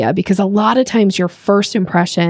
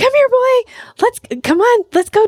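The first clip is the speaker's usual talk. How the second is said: very high, loud, aggressive yet playful calling voice. Showing how people call a dog: high-pitched loud dog-calling voice. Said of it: "high-pitched, like, aggressive, kind of fun, loud thing".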